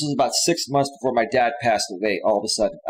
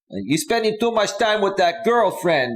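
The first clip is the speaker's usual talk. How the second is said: put-on heavy, thick Greek accent, much higher pitch; 9 semitones higher than usual. Retelling the dad's complaint about the girlfriend, the speaker uses a thick Greek accent. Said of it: "with this big, thick Greek accent".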